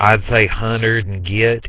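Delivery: very thick, heavy southern US accent. Recalling how they talked in tenth grade, the speaker demonstrates a thick southern accent. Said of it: "talking quite like this".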